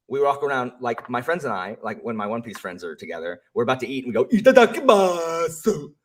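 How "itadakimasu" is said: ridiculously shrill, very high, loud silly cry. Retelling how Luffy says it before eating: imitating Luffy's ridiculous Itadakimasu. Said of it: "since it's ridiculous".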